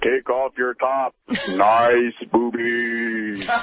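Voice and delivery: booming god-like voice. A caller acts out God speaking to a contestant modeling lingerie; booming God voice. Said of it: "That was a little impression of God there".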